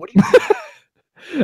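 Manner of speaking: high, slow, drawn-out incredulous teasing tone.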